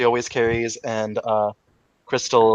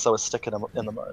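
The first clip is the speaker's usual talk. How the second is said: muttered under breath, quietly, quieter than before; 8 dB quieter than usual. Voicing a character who looks off to the side: muttered under her breath. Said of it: "under her breath".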